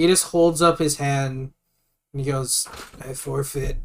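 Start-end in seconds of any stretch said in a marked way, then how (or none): 3.0-3.8 hushed, lower and quieter. Voicing a beaten fighter who yields after the fight: very quiet. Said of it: "Just very quietly".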